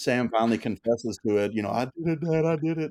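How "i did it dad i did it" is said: mock crying, sobbing through the words, high. Quoting a confession made to Dad after a whipping, retelling a crying confession. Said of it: "we're at that crying where it's like".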